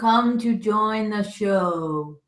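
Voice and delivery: very loud, slow, deliberate, stretched out. Repeating a line after being asked to talk louder: speaking louder. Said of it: "You gotta talk a little louder than that".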